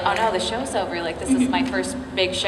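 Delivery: ordinary talk, nothing marked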